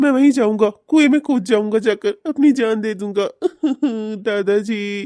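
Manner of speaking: sobbing, weeping, despairing voice. A grandfather talks to his grandchild, crying. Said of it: "अरे आप आप ऐसे रो क्यों रहे हैं?".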